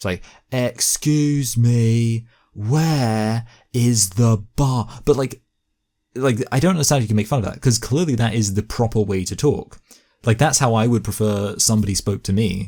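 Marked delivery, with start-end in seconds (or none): 0.5-4.9 very slow, loud, spelled-out English. Mocking how English people talk to non-English speakers: mock loud, slow talking. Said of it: "we just talk louder and".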